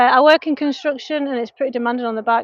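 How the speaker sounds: plain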